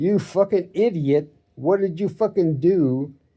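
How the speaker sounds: acted-out, anguished, pained yell. Retelling a man running over his foot, yelling at him: retelling a yell.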